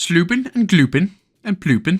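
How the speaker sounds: bad, terrible put-on Swedish accent. Narrating a game crossing, riffing on made-up words, in a terrible swedish accent. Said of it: "my terrible Swedish accent".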